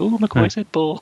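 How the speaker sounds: mock squealing giggly young kid voice, very high. Retelling a childhood reaction to a film line: imitating a giggling eleven-year-old. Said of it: "eleven-year-old me giggling like".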